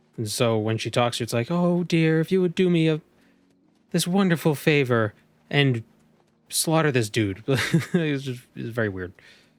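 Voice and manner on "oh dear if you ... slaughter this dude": put-on high, sweet, raised motherly voice. Describing how the character talks in Daggerfall, doing Meridia's put-on motherly voice. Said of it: "they wrote her like a almost very motherly".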